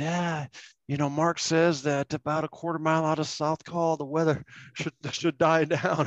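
acted-out high yell. Retelling a teammate's yelled reply over howling wind: imitating someone screaming back. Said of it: "he screams back at me".

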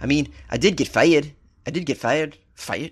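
fake, poorly done New Zealand accent. A speaker quotes what Thompson told the media, in a bad New Zealand accent. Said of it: "What's a New Zealand accent?".

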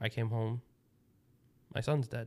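mock soft, flat, dead-even monotone with no feeling. Describing a mother who comes home to find her son dead: imitating a flat monotone. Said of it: "she is monotone and like no feeling whatsoever in her voice".

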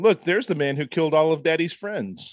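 mock passive-aggressive tone. Retelling how a neighbour spoke to a dog in the lobby: imitating passive-aggressive talk to a dog. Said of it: "would passive aggressively talk to his dog".

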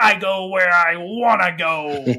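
growly, gruff cartoon-hero voice. Describing an animated show, quoting one of Wolverine's lines, growly Wolverine voice. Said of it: "he's got this real growly voice and he's like".

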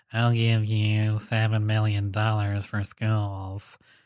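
very slow, drawn-out delivery, every word dragged out. Retelling a video where a pledge is made to schools: Mark Zuckerberg impression. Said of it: "That's my Mark Zuckerberg impression".

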